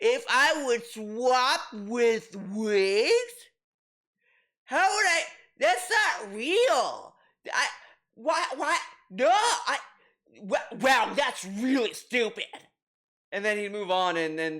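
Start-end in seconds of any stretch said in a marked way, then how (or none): 0.0-12.4 very slow, drawn-out, dismissive brush-off. Imitating how DSP would answer a dumb question: imitating DSP brushing it off. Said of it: "Because you ask D S P, like".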